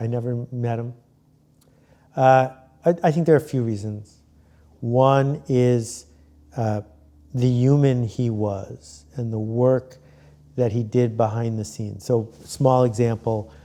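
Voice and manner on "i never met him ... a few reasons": voice catching, choked up with emotion. Asked why he cried over a death, he answers while getting choked up. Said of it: "I'm getting choked up right now".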